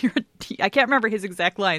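ordinary delivery

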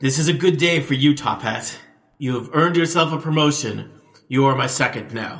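loud voice ringing and echoing as in a great hall. Voicing a glowing-eyed figure promoting a player: echoing voice filling a hall. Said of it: "the voice echoes throughout the hall".

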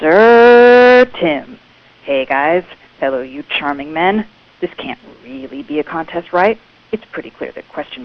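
ingratiating reality contestant voice, drawn-out "sir". Reading a question the way a reality show contestant might, reality show contestant voice. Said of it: "how a reality show contestant might read the question".

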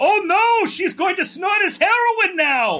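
put-on very high, blurted-out shout. Retelling a movie screening, speaker quotes a man behind them: retelling an old man's shout. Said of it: "the old man behind us shouts out".

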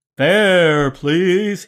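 loud, eerie, spooky ghostly voice. Narrating a conductor who blocks the player's path on the ghost train, ghostly voice. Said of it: "he says in a ghostly voice".

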